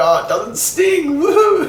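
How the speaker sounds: high, loud, gleeful, delighted whoop. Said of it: "I'd be like".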